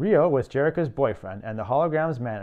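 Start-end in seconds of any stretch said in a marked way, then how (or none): none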